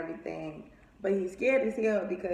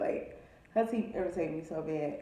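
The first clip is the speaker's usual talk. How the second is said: plain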